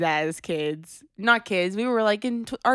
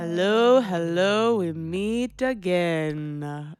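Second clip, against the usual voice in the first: spooky put-on vampire voice. Opening the Calhoun show with a greeting, in a Count from Sesame Street voice. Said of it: "You just sound like the Count".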